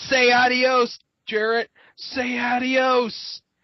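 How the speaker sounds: high, taunting scream, adios drawn out. Retelling a wrestler choking his rival: imitating a scream. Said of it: "And screams".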